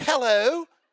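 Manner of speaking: very high, loud, fake Australian accent, phone voice. Imitating a spouse answering the phone, in a fake australian phone voice. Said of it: "Why'd you go Australian or whatever?".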